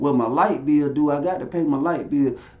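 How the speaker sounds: ordinary talk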